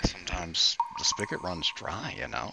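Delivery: low, soft whisper.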